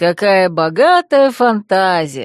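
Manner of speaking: teasing drawn-out delivery. Narrator reads a character's reply to the first-person narrator, a mocking drawl. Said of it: "насмешливо протянул Верфокс".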